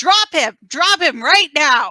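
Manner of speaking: loud, high-pitched, scolding shouted voice. Casting a hex in a tabletop game, the player yells at the creature, yelling a command. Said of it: "Just going to yell at it like".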